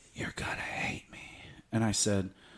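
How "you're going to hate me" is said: put-on whisper, quieter. Retelling what a woman whispered in his ear: imitating someone whispering. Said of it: "she whispers in my ear and says".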